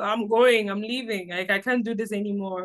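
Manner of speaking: usual speaking voice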